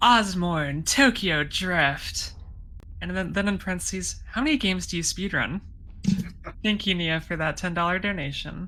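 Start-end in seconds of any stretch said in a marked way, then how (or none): 0.0-2.3 epic, dramatic movie-trailer announcer voice. Reading out a ten-dollar donation message, movie announcer voice. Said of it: "I'll try to do my best movie announcer voice here".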